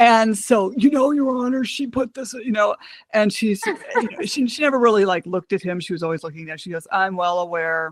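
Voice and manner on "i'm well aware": dead-level, uninflected, completely flat monotone drone. Retelling the child support judge's reply in court, Elizabeth Kelly's flat monotone. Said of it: "complete monotone".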